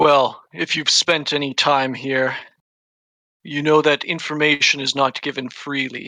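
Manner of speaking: malignant, menacing demon lord voice. The game master, as the pit fiend on its throne, addresses the players: pit fiend voice.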